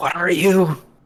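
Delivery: really loud, high stage whisper. Narrating a figure calling out to the pale figure before it, in a loud stage whisper. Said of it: "whisper out in a really loud whisper, like a stage whisper".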